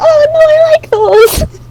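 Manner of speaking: high, slow, crying whimper. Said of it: "Tori makes a really sad noise".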